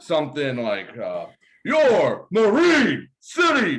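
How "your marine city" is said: booming, very loud, swooping, excited announcer voice. Urged on by others, show how he announces from the press box: impression of Fred announcing. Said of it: "your impression of Fred when he's in the press box announcing".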